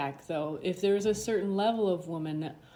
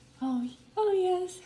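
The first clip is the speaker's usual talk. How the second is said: put-on polished, attractive woman's voice, much higher, slower; 12 semitones higher than usual. Showing someone how a woman talks, imitating a woman's coached, attractive voice. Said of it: "talk like she's more like".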